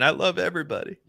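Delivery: very high coach-style exclamation. Trying an impression for the others while drafting: Jon Gruden impression. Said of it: "try to do a John Gruden impression".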